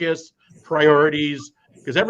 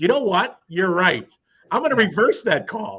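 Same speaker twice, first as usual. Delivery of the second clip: acted sarcastic, sing-song, yielding tone; 3 semitones higher than usual. Mocking how an official answers a yelling parent: imitating an official, sarcastic. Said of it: "Obviously, that's complete sarcasm".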